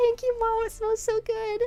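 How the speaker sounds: put-on high, sweet, childlike little girl voice.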